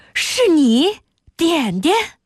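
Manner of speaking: startled, high, drawn-out cry of surprise. Narrator reading a story, a teacher recognizes the narrator, exclaiming in surprise. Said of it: "高宽惊呼道".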